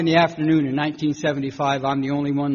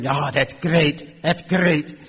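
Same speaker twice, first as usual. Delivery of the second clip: put-on Scottish man's accent. Retelling what a Scottish man said at the jail door: imitating a Scottish man. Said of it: "a Scottish man with a patch".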